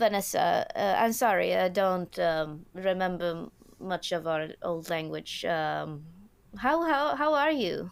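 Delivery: put-on German-Swedish accent, broken English. A character greeting an old acquaintance, in a weird German-Swedish broken English accent. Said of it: "in her weird German, Swedish, English, broken English accent".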